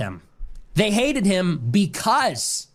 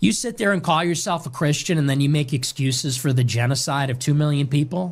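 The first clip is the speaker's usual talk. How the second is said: plain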